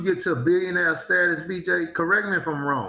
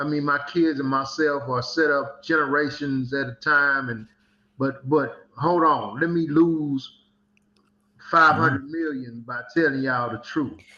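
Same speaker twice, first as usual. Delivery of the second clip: normal talking voice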